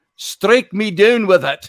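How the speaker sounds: put-on Scottish accent. Repeating a man's quoted line to show how he said it: Scottish accent. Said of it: "that's Scottish".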